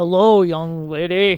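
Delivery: big, booming, loud delivery. Imitating how the shop owner greets a young lady: Al Mazzella impression. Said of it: "I have to channel".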